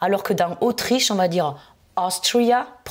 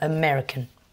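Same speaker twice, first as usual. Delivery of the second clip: American, with the second syllable -mer- leaned on; 4 semitones lower, 3 dB quieter than usual. French lesson on english nationality words: stress on second syllable of american. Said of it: "On insiste sur la deuxième".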